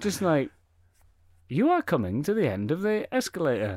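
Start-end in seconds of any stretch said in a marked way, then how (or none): 1.5-3.8 bright, optimistic, breezy, sing-song automated announcer voice. Imitating an automated announcement voice: breezy, optimistic automated voice. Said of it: "breezy, optimistic".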